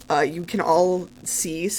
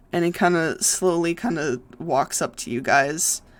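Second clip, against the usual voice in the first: normal talking voice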